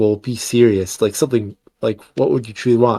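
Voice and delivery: ordinary talk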